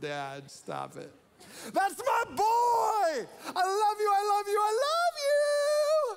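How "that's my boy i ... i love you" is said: very loud, very high, proud, gushing cheer. Imagining God cheering on his son, retelling God's loud cheer. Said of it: "he's loud in his approval".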